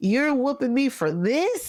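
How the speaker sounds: put-on indignant, high, angry kid-like voice. Retelling a childhood reaction to being whooped: imitating own angry younger self. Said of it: "I was more so angry".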